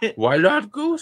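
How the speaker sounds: very high put-on voice, fumbled, falling apart. Quoting a chat message, attempting a Zoidberg voice. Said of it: "almost like a "Why not Zoidberg?"".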